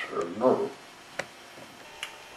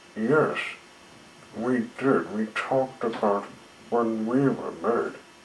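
ordinary delivery

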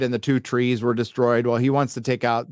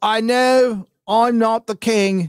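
very slow, clumsy, bad fake English accent; 10 semitones higher, 4 dB louder than usual. Recapping a character's weak rallying speech, in a bad English accent. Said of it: "That's a bad English accent".

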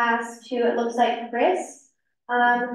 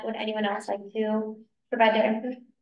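plain

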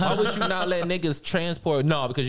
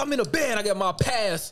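put-on, heated, worked-up, agitated voice; 7 semitones higher than usual. Retelling being choked by a security guard, retelling getting worked up. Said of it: "I start turning up".

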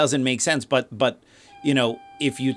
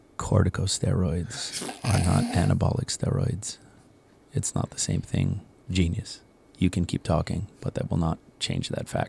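soft, whispered ASMR-style voice; 7 semitones lower, 5 dB quieter than usual. Setting an arguer straight in an imagined reply, in an ASMR-style voice. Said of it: "say in your best ASMR style voice".

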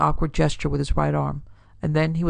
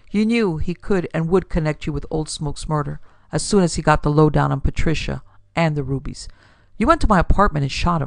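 ordinary delivery

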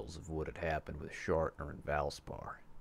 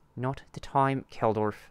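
very loud, high, frustrated, exasperated outburst; 8 semitones higher, 8 dB louder than usual. After an interruption from another character, he responds: frustrated. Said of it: "Barnaby said in frustration".

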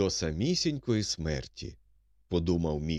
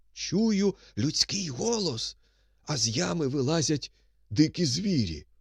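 amazed, astonished musing with pitched-up marveling wonder; 7 semitones higher than usual. Reading a man's words as wild beasts climb out of the pit, marveling. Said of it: "зчудувався Міхал".

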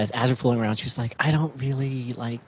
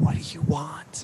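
soft, slow whisper trying to sound sexy; 4 semitones higher than usual. Retelling a line whispered in the ear during dirty talk: imitating a whisper. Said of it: "whispers in my ear".

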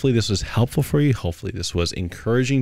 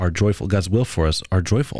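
plain

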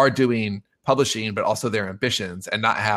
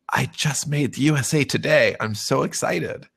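slow, secretive, confiding stage whisper; 4 semitones higher than usual. Retelling how a fellow panelist leaned over before speaking: imitating someone whispering. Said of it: "she whispers to me".

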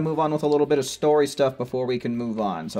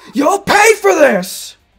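very high, very loud, shrill furious villain voice; 11 dB louder than usual. Playing a game, repeating an angry enemy's line in a mock-angry villain voice. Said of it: "He's all pissed off".

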